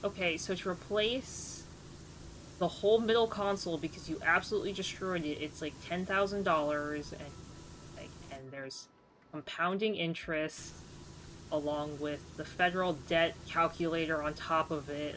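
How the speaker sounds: ordinary talk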